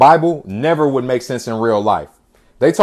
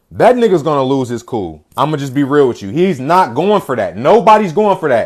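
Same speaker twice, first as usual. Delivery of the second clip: plain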